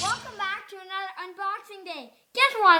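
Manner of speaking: hyped-up, excited, all fired up, rattled off. Opening an unboxing video, the speaker is excited shouting because school ended. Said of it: "I'm shouting because".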